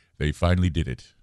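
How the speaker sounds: put-on British accent, very low-voiced. Retelling what a silent stranger on a plane suddenly said, in a very low british accent. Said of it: "Very low British accent".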